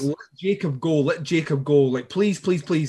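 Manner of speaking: plain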